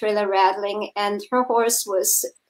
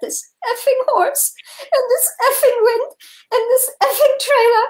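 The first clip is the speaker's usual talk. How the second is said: higher, louder, put-on tearful crying voice; 4 dB louder than usual. Retelling a student's words while sitting on a trailer fender: imitating someone crying. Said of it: "and she was crying".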